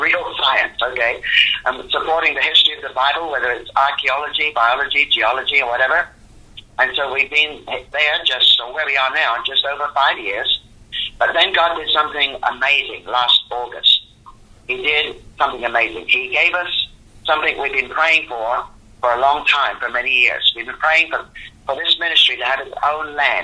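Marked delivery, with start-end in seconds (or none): 0.0-0.8 real hit hard as the key word. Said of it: "Underline it again".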